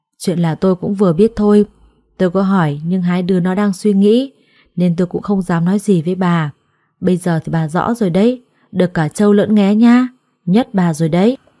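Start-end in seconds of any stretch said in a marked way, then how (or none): none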